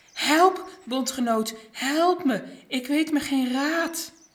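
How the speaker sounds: out of breath. A prostate cell, asked how it is, answers while working; panting. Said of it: "hijgde prostaatcel terwijl hij doorwerkte".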